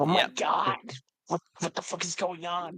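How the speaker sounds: still quiet voice. Voicing a character who opens a door and sees this: still kinda quiet voice. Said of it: "I keep my voice, like, still kinda quiet".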